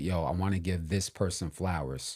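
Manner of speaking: ordinary talk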